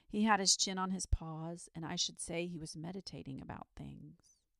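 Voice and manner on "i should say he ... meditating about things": ordinary delivery, nothing marked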